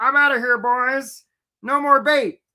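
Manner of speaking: high crab character voice. Telling a crab story, voicing the crab Bob: Bob the Crab voice. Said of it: "That's his voice".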